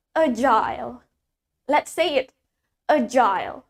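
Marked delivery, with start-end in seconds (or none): 0.2-1.0 British English pronunciation. Teaching learners how a word is said in british english: british pronunciation. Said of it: "di British kita mengucapkannya sebagai agile".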